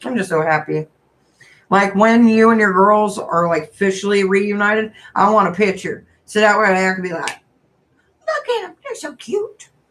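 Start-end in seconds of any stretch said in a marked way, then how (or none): 8.3-9.7 put-on very high, soft little old granny voice. Imagining looking at a picture, in a little old granny voice. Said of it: "that's my little old granny voice".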